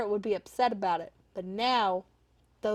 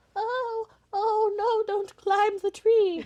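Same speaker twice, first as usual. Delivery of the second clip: put-on very high, loud, worried, fretful old-lady voice; 12 semitones higher, 5 dB louder than usual. Describing the kind of grandmother she won't be, imitating a fretful granny. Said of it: "I'm not gonna be sitting here like".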